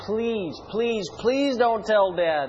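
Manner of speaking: play-acted, high-pitched, desperate pleading for dear life. Retelling begging his mom, acting out his past self's begging. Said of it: "I began to beg Mom".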